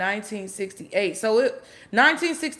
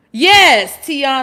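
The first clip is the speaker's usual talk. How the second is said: full-volume loud yelling shout; 3 semitones higher, 12 dB louder than usual. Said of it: "I'm sorry, I'm yelling".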